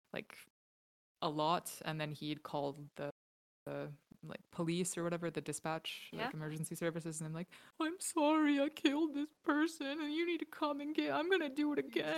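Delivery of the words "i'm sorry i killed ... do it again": very high, tearful, weepy crying voice. Retelling how a serial killer called emergency services after a murder, imitating a weepy voice. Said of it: "this weepy".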